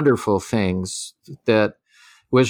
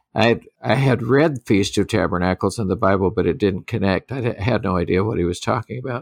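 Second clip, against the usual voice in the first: normal talking voice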